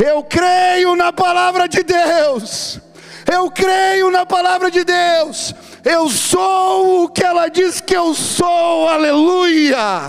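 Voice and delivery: mock very high, very slow tearful shout, "sou" stretched. Retelling a crying girl hugging her Bible, imitating someone shouting. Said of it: "ela começa a gritar".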